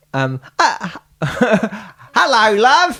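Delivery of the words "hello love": Australian accent. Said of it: "so what would Australian be like".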